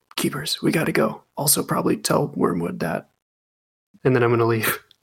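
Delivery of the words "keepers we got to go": hushed whisper, higher pitch. In a tabletop game, tapping a fellow character on the shoulder, whispering. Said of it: "I'm just going to whisper".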